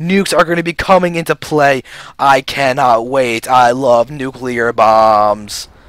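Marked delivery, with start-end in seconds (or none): 2.2-5.7 deadpan flat monotone, very slow, nominally excited. Commentating a match as a player gets a nuke, speaker speaks with monotone excitement. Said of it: "That's my excited voice, by the way, even though it sounds kind of monotone".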